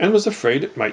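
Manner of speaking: plain reading voice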